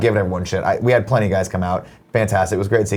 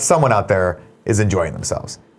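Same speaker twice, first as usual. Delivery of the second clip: plain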